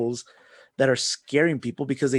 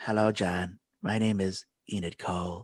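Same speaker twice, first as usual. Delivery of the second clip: weird creepy voice, low, soft and hushed; 6 semitones lower, 6 dB quieter than usual. Telling someone about a creepy movie, showing how its character talks: weird Indrid Cold voice. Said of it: "it's like really weird".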